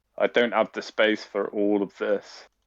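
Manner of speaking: normal talking voice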